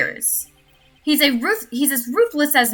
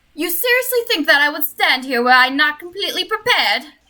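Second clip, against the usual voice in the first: haughty, nasal voice, said down the nose. Voicing the prosecutor answering the judge in court: hoity-toity Von Karma voice. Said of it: "a really hoity-toity voice".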